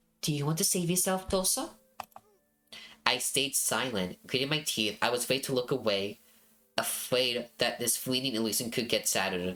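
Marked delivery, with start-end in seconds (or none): 0.2-1.7 sweet whisper, much higher. Reading a story, a woman embraces the narrator and speaks in a sweet whisper. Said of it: "whispered in a sweet voice".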